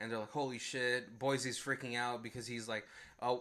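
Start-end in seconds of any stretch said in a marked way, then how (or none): none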